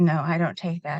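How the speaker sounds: ordinary talk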